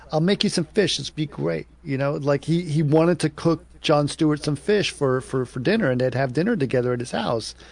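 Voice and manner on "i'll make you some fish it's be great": said in a menacing, threatening tone. Retelling a TV guest inviting the host over: Christopher Walken voice. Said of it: "It was like".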